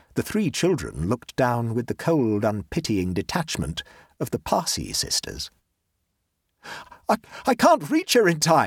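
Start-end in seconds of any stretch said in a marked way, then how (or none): 7.1-8.7 high-pitched, breathless, gasped-out words. Reading a story, a character sees a girl sinking in the muck; gasping. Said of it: "gasped Octavian".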